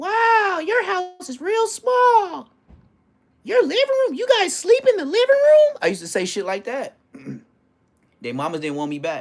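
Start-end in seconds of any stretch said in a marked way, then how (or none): 0.0-5.8 put-on very high, loud, bratty little-kid voice. Retelling how he talked as a spoiled kid in friends' houses: little kid voice. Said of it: "with this little voice".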